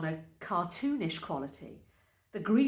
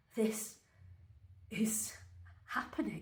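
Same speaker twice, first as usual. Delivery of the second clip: trembling, unsteady, hushed voice; 4 semitones higher, 9 dB quieter than usual. A first-person narrator, hauling Jen up from the carpet, speaks in a shaky voice. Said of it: "My voice is shaky".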